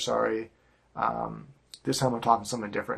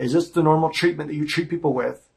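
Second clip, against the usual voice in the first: agitated, raised, upset voice; 5 semitones higher, 5 dB louder than usual. Retelling a phone complaint about held products: re-enacting own upset complaint. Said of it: "I'm trying to reproduce my, my emotions at the time".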